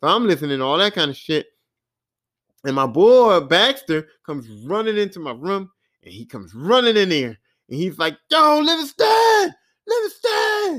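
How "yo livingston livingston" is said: mock screaming, much higher pitch, slower. Retelling how his friend ran into his room, imitating him screaming. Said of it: "he just keeps screaming".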